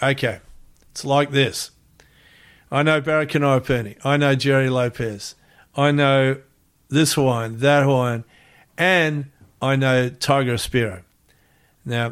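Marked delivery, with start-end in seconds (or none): none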